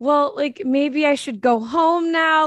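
high, tearful voice, spoken through crying. Retelling her words as she cried: imitating someone crying.

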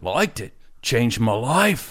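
badly faked, terrible Australian accent. Retelling what a guy said about loving the show: terrible Australian accent. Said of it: "I'm going to do a terrible Australian accent".

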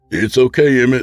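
feigned calmness. The narrator speaks to Emmett, who holds a knife to Frederick's throat, with forced calm. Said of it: "I said with a calmness that I didn't truly feel".

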